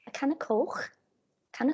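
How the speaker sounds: Liverpool accent. Put on the spot, demonstrating how words sound: Scouse accent. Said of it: "I can say some words in a Scouse accent".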